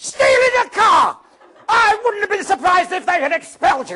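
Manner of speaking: shrill, booming, scolding shout at full volume. Giving an example of Mrs Weasley's loud line, Mrs Weasley voice. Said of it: "That's the voice".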